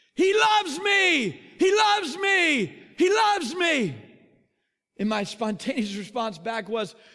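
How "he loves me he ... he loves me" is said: very loud, high-pitched, drawn-out scream. Retelling how Keith grabbed a shirt and started screaming: imitating Keith screaming. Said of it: "he starts screaming".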